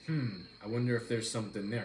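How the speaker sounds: normal talking voice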